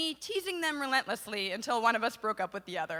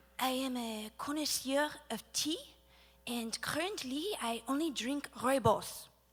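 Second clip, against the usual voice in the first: put-on French accent with smooth delivery; 3 dB quieter than usual. Comparing accents, saying a line first in a french accent. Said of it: "in a French accent".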